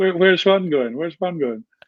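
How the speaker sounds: amused, chuckling through words. Retelling the forwards coach asking where Juan is going: imitating someone laughing while talking. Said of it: "kinda laughing".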